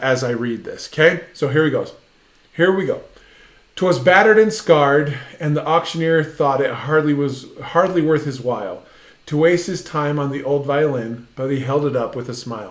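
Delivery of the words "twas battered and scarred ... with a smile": ordinary talk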